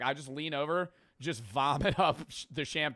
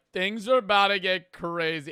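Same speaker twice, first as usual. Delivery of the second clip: mock drunk slow speech, higher and louder; 5 semitones higher, 6 dB louder than usual. Imitating own past drunk words: imitating own slow drunk talk. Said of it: "and I'm talking all slow".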